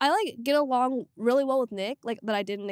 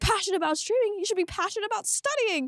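put-on yell, pitched higher; 7 semitones higher than usual. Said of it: "yelled at me".

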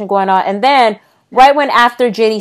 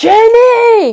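mock screaming in German accent, higher and louder; 4 dB louder than usual. Retelling how a wrestler yelled to her tag partner: imitating Jazzy screaming, attempted German accent.

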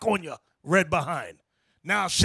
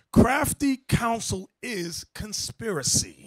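slow, deliberate, carefully spelled out; 3 semitones higher than usual. Explaining a scripture phrase to listeners, saying it slow and deliberate. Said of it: "Let me say it slow".

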